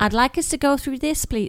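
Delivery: really bad, shoddy, unconvincing American accent. Retelling what an American woman who helped them said, in a really bad American accent. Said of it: "That's a really shit American accent".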